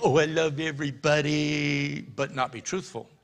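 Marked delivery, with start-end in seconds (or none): 0.0-2.0 syrupy, over-sweet, gooey gushing voice. Mocking a loving but untruthful person: mock gushy voice. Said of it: "gooey, gushy".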